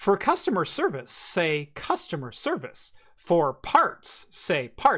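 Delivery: sing-song, swooping automated phone menu voice. Retelling what old phone menu systems said: imitating an automated phone voice. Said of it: "old voice, uh, auto voice systems would be like".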